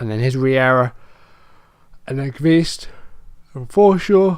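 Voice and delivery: talking through a yawn. Narrating the passes leading up to a goal, yawning while talking. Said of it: "Sorry, I'm yawning".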